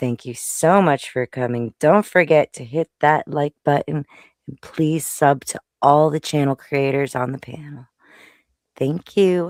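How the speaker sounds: put-on sultry voice. Asking the audience for donations to the host: put-on sexy voice. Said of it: "when she does her sexy voice".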